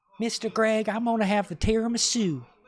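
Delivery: put-on very high, sweet, polite little Southern girl voice. Retelling what a six-year-old girl said to him, imitating a sweet Southern girl. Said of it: "so sweet, so polite, so nice, and so Southern".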